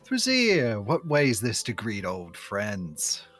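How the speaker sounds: character voice, called out loudly. As Nephros, leaning around them to greet Thrazir, Nephros calling out loudly. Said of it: "sort of say quite loudly".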